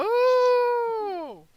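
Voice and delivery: very high, loud, shocked gasping cry.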